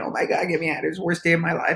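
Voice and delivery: put-on whiny, complaining voice, high. Telling a joke, voicing the always-sad one stuck in the box, imitating whining. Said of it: "he's whining".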